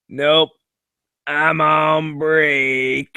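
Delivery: very slow, lazy, can't-be-bothered drawl. Complaining about getting things fixed, imitating the worker: union guy impression. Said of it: "That's like just my impression of any union guy".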